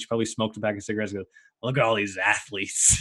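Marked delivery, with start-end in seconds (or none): 1.6-3.0 play-acted scornful, deriding, sneering tone. Retelling what Nani said about the athletes, in a mock-deriding tone. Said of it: "like deriding sort of way".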